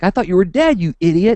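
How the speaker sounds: high, loud angry yell. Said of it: "I yelled at him for scaring me".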